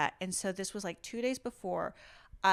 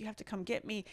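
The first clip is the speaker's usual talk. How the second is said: put-on tearful crying voice, quieter; 7 dB quieter than usual. Retelling calling someone for help after throwing out a back: retelling own tearful plea. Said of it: "and I'm, like, crying. I'm like".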